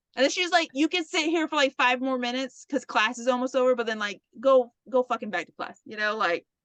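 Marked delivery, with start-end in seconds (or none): none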